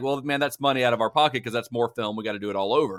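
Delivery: normal talking voice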